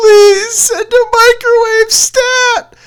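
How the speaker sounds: high, slow, loud sobbing, pleading in tone.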